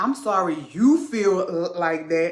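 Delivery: mock hollow, insincere tone, not meant. Mocking a partner's fake apology: imitating a fake apology. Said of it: "one of them fake ass apologies like".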